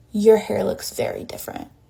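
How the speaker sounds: sharp, pointed delivery. Retelling what grandma said again after being told off: imitating grandma's pointed tone. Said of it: "that tone".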